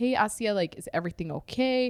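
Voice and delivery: ordinary talk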